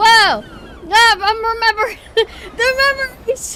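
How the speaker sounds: loud, high, startled shriek with laughter.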